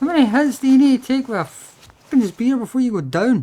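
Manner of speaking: high, loud frustrated outburst.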